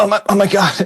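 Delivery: very high, flustered, tripping-over-words babble. Retelling jumping in for a photo with a musician, in a put-on fumbling voice. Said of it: "in a fumble kind of voice".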